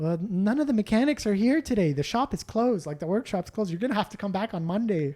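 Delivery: sweet, kindly, nice Canadian lady voice. Retelling how a lady at a closed shop turned you away, imitating a sweet, nice Canadian lady. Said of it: "sweet, nice Canadian lady being like".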